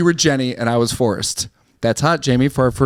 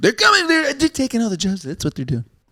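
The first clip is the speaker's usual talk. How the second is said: middling put-on voice, swooping, sing-song, pitched up; 8 semitones higher than usual. Role playing with the others, who judge your impressions, do a not-great Trump impression. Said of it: "That's not a bad Trump".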